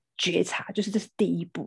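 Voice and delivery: plain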